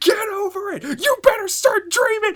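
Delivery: acted very high, shrill screaming yell. Retelling a scene where Asta screams at a kid: imitating Asta screaming. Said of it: "He just screams at the kid".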